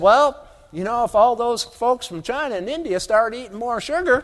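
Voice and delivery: mocking voice of a Texas cotton grower.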